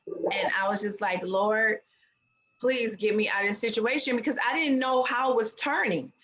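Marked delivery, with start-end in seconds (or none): 1.3-4.2 quiet murmuring under the breath. Recounting a tense ride with a man who has a gun, retelling praying under breath. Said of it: "praying under my breath".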